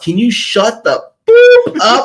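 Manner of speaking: very high, swooping, drawn-out rising yell. Retelling how Keegan turned around and yelled at loud spectators: imitating Keegan yelling. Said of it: "He turns around and just yells".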